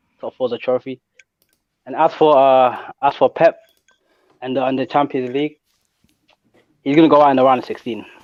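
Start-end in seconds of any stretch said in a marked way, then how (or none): 0.2-1.0 softer, calm delivery. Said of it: "I'm on my Wenger vibes".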